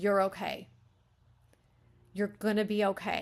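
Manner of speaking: frightened voice steadying itself with reassurance. Coaching how to reassure someone while being afraid yourself; afraid, trying to reassure. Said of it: "that's kind of what I'm feeling is like".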